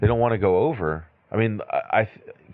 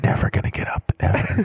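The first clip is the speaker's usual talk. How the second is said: acted whispering; 3 semitones lower than usual.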